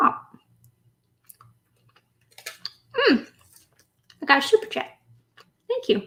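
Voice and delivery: soft talk through a mouthful of food, chewing. A streamer, mid-bite, notices a super chat and thanks the viewer, talking while chewing. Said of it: "I was chewing as I noticed".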